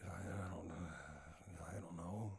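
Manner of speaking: acted hushed, low, weary, put-out, drawn-out murmur. Imitating an actor's voice role in a pet film: imitating a tired voice. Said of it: "you just sound tired".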